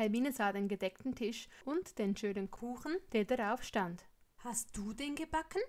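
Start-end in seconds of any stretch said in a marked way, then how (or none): 4.4-5.6 amazed, wondering, astonished tone. Reading Hermine seeing the cake on the table, asking in astonishment. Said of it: "fragt sie erstaunt".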